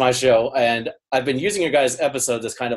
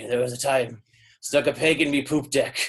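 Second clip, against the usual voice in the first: put-on old sea-dog pirate voice; 4 dB quieter than usual. Retelling a funny podcast moment, doing Mike Shue's pirate voice. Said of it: "in a pirate voice".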